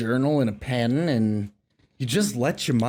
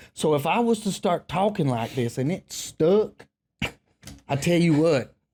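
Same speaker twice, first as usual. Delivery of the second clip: put-on Southern Louisiana Creole drawl; 4 semitones higher than usual. Explaining that nobody they know talks this way, in a Southern Louisiana Creole accent. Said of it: "I don't know anyone in my entire life that talks like this".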